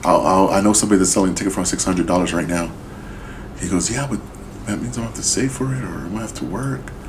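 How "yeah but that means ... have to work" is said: soft, sad, complaining tone. Retelling a friend's reply when offered a concert ticket, mock-sad retelling. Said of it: "he's all sad and shit".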